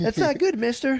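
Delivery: very high, put-on little kid voice. Retelling a conversation with another person, in a little kid voice. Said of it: "That was actually a really good kid voice".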